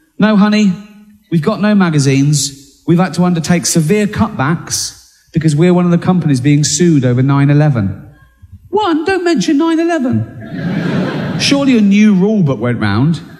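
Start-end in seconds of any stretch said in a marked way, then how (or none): none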